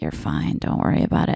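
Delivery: soft whisper under the breath, kept hushed. Retelling what a woman nearby answered, the speaker imitates her whispering. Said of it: "why are you whispering?".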